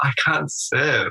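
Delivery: mock high, tearful voice, close to tears. Retelling what they told their dad during a game, acting out a crying voice. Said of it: "in my crying voice".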